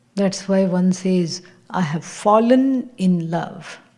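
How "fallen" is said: leaning on 'fallen', stressing the word. Explaining what people mean when they say they fell in love, stressing 'fallen'. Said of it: "With the emphasis on the word fallen".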